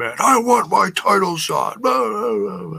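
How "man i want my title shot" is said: ranting, insistent, demanding wrestler-style scream. Retelling a demand for a title shot: imitating someone screaming. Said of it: "he's just screaming".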